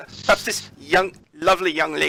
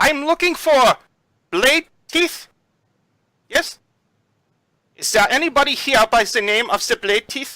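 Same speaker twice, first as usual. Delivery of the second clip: high-pitched yell, calling out widely; 8 semitones higher, 4 dB louder than usual. Narrating a man with a cane who shifts a player aside, yelling. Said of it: "And he yells".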